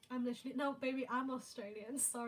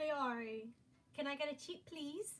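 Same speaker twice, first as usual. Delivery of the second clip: put-on Australian accent; 3 semitones higher than usual. Showing off to listeners, Australian accent. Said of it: "Do you guys like my Australian accent?".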